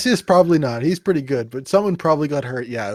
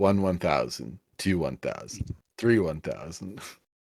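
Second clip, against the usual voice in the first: very low, hushed mutter under the breath; 8 semitones lower, 8 dB quieter than usual. Voicing a character counting seconds in a parked truck: muttering quietly under breath. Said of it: "very quietly, just, like, muttering under his breath".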